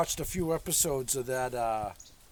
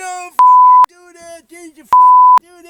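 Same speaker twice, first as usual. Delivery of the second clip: mock very loud, very high, shrill, swooping furious yelling; 23 dB louder than usual. Describing a man on a show yelling at his wife: imitating a man yelling angrily. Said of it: "yelling at his wife and swearing".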